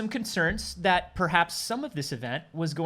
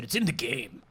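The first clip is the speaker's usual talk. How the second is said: put-on odd, weird, babyish voice; 6 semitones lower than usual. Acting out ea answering a call: weird baby voice. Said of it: "In a weird baby voice is what they said".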